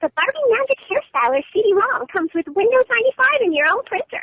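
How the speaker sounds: rattled-off commercial announcer voice, very high, swooping, bright. Demonstrating a line from their past Barbie commercial voice work, fast Barbie commercial voice. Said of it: "the voice would have to talk really, really fast".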